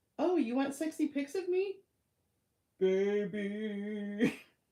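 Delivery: mocking put-on voice. Reading out chat messages from him, then mocking him: mocking imitation of him. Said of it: "I was just mocking him".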